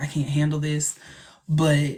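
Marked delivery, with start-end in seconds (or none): none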